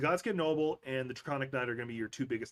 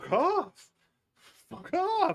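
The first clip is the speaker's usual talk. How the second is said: put-on emo-style outburst, higher and louder; 7 dB louder than usual. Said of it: "he just goes into, like, full emo mode".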